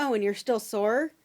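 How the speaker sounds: joking sarcastic voice. Retelling what he said during the exam: imitating sarcastic joking. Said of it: "he starts making sarcastic jokes".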